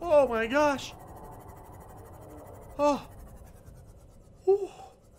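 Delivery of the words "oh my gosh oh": high, loud terrified panicked screaming. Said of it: "That scared the crap out of me".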